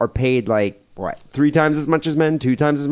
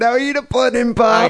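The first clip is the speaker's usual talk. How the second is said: put-on celebrity-style voice, pitched very high; 10 semitones higher than usual. Teasing the other speaker about sounding like Bill Cosby: Bill Cosby voice. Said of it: "you always try to sound like Bill Cosby?".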